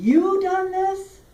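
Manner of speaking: stress on YOU, held high and long.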